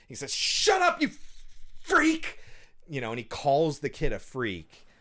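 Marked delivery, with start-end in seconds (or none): 0.3-2.3 put-on, shrill, high, enraged, furious, drawn-out shout. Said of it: "he slams on the table".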